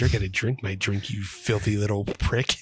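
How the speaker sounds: mock dominant, demeaning, commanding taunting tone. Retelling a movie scene of dom sub play: imitating a domineering character. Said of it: "dom sub play".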